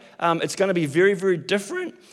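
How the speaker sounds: cracking, breaking voice. Speaker announcing upcoming changes to listeners, voice breaking. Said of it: "My voice is breaking".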